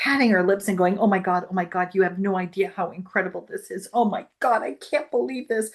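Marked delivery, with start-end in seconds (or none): 1.0-5.7 put-on tearful, joyful sobbing. Retelling what a woman said after the speaker shared what happened, imitating her sobbing with joy. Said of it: "And she's just sobbing".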